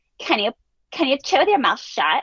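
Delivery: disgusted tone with swooping pitch. Retelling how a sister at the dinner table told her brother off, imitating her disgusted tone. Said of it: "with disgust uses this tone of like".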